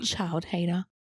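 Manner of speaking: put-on child voice muttering under her breath. Retelling what a seven-year-old said about the speaker: imitating a child muttering under her breath. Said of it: "But under her breath".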